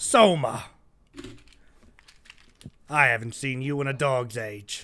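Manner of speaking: slow, little dwarf man character voice. Voicing a dwarven man greeting a player: dwarven man voice. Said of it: "a little dwarven man looking back at you, and he goes".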